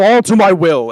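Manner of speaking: very loud, booming, high, ghostly spectral voice. Casting a spell to dominate a foe: spectral voice. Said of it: "is what I say in my spectral voice".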